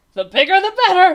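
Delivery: very high, shrill, loud, booming laugh through the words. The king answers Bartholomew's worry about the blobs, laughing. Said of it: "laughed the king".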